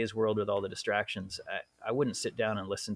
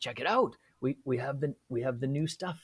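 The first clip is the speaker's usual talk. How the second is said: put-on German accent, higher; 4 semitones higher than usual. Retelling what a man said as he waved the speaker over, put-on German accent. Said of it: "he's like".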